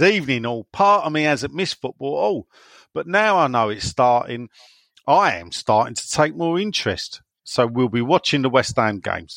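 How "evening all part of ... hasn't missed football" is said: usual speaking voice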